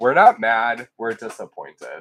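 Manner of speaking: mocking tone. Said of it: "a sarcastic world".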